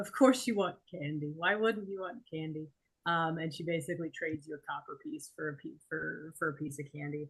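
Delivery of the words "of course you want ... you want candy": laughing lightly, amused chuckle through words. Narrating a tabletop scene, voicing the woman at the register as you walk up, chuckling. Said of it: "she just chuckles and she says".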